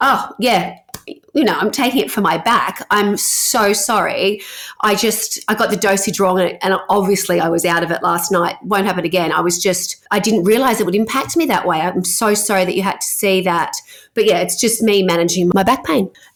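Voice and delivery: normal talking voice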